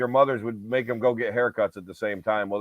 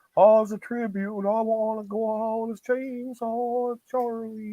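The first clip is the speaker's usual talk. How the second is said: bad put-on old Texan wrestler voice, higher; 11 semitones higher than usual. Retelling a wrestler's words about a barber: terrible Terry Funk impression. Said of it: "terrible Terry Funk impression".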